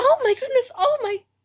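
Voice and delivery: loud, very high, shrill cry of dismay and shock. At the library desk, [name] hears that Essie got shot, [name]'s loudest exclamation. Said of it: "This is the loudest you've ever heard her".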